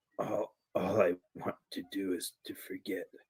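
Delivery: very quiet, soft, hushed whisper. Game master voicing a man with doubt in his eyes: whisper. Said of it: "he he whispers".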